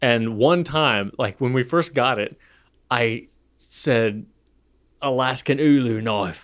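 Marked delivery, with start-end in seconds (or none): 5.0-6.4 put-on Australian accent. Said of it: "in, like, an Australian accent".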